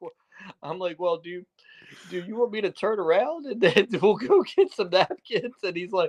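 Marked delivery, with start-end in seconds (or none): 1.0-5.6 put-on frightened, nervous, timid voice, pitched up. Retelling own nervous reply to an angry friend: retelling own scared reply. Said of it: "I'm just, like, so scared".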